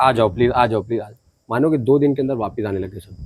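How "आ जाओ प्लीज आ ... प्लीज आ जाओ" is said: ordinary delivery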